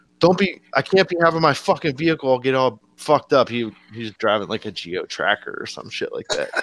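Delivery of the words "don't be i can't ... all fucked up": angry, fed-up, high-pitched, pissed-off outburst. Retelling what the pissed-off driver said: imitating a pissed-off driver. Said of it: "he got pissed off".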